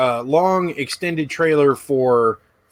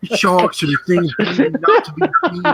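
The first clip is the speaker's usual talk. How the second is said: put-on British presenter accent, pitched higher; 5 semitones higher than usual. Doing the accent again after being asked, imitating Nigel Marvin's accent. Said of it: "Do it again".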